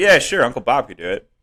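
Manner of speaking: put-on nonchalant, casual tone. Retelling a father's reply about building from blueprints: imitating dad's nonchalant tone. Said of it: "It was exactly like that".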